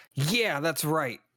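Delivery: light shout at about talking level. A player's character looks at another figure and yells at him: yelling. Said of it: "look at him and yell".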